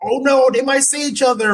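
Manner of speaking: put-on frantic, shrill, very high panicked screaming. Describing an underling who ruins the plan, imitating someone screaming. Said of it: "just starts screaming".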